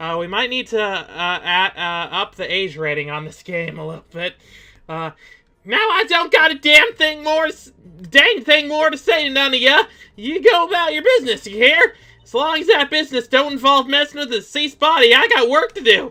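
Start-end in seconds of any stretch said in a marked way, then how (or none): 5.6-16.1 put-on high, raised elderly grandmother character voice. Reading a game's lines as a grandma dismissing visitors: grandma character voice.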